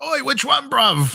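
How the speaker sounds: put-on very high voice, heavy Cockney accent. Retelling what the guy he rode with from the plane said, thick cockney accent. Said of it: "the thickest Cockney accent I've ever heard".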